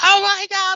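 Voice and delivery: shrill, very high, loud shrieking scream.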